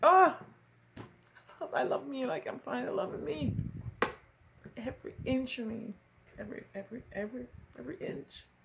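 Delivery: crying through the words. Speaking to the ladies present, crying while talking. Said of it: "Why am I crying?".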